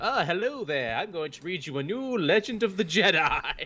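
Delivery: spooky, ghoulish horror anthology host voice. Joking about an anthology series hosted by Ewan McGregor as the Crypt Keeper. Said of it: "with Ewan McGregor as, like, the Crypt Keeper".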